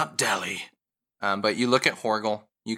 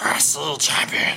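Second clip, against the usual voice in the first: bear creature voice, higher; 5 semitones higher than usual. Voicing the bear as it gets its own voice back: owlbear voice. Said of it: "And back into the owlbear voice".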